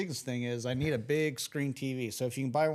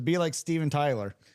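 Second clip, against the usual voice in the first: ordinary talk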